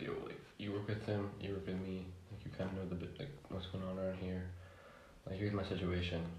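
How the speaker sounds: normal talking voice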